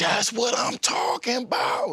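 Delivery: acted loud shouting. Retelling his mom's reaction to his first playoff win: imitating mom shouting loudly. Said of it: "dang, mama, why you so loud?".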